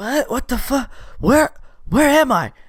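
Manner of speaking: high, startled, just-woken confused voice.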